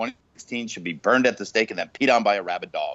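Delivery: ordinary delivery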